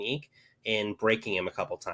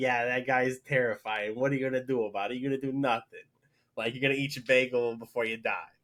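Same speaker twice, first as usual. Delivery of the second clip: put-on New York accent; 2 semitones higher than usual. Describing a terrifying guy, speaker voices a bystander's reaction in a put-on New York accent. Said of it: "I don't know where the New York accent came from".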